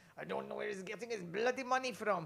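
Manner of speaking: put-on accent from Iran. Quote what the man's dad said to you about his money, in your best thick Iranian accent. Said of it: "that's my best Iranian thick accent".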